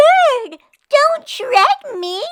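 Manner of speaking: shrill little squeaking cry, very high and loud. Narrator reads the princess's cry as a jay flies off with her, squeaky voice. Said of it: "the princess squeaked".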